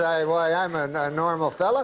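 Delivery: ordinary talk, nothing marked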